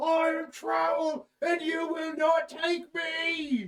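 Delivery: whooping all-out battle cry, shrill, booming, me drawn out. A player describes their character running back into the shelves, retelling a loud holler. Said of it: "whooping and hollering as loud as I can".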